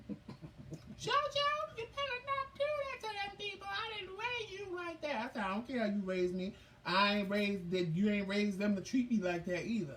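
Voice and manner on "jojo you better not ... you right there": put-on very high, girlish little-girl voice. Speaker imitates a scolding grandmother, high-pitched little-girl voice. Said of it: "she had a high pitched voice and she sounded like a little girl".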